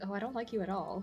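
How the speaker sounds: quiet aside, muttered under the breath. Voicing a character's remark to a kid riding along: muttering under her breath. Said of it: "just under her breath".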